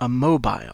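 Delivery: loud British English pronunciation of mobile. French lesson comparing pronunciations, saying a mobile with british english pronunciation. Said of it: "c'est la prononciation anglaise, avec mon accent anglais".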